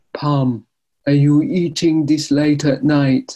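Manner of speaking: put-on Jamaican accent, called out loudly. Retelling her dad catching her eating late at night, in his jamaican accent. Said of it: "in his Jamaican accents would say".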